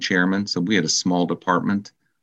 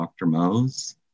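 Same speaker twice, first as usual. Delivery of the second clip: mock-sheepish tone. Speaker retelling knocking on a doctor's door, retelling a sheepish greeting. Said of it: "I just sheepishly said".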